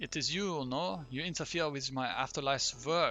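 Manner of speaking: put-on blended French and German accent, swapping between. Voicing the ghost during a game event, in a French-German accent. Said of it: "Swaps between French and German a little bit".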